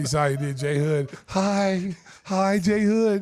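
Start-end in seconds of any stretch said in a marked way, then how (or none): 1.3-3.2 put-on creepy voice, higher and louder. Retelling how someone peeked around a corner: imitating Nicky's creepy greeting. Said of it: "that was creepy, Nicky".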